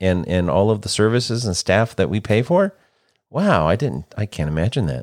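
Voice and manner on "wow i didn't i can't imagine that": openly sarcastic, swooping sing-song delivery. Reacting with mock surprise to politics being weaponized: sarcastic. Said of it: "That's sarcasm".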